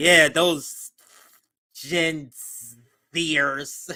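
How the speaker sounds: slow, scornful, contemptuous, disdainful drawl. Retelling how the caller sounded about younger voters: imitating a disdainful caller. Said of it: "the anger in her voice, the disdain. She's like".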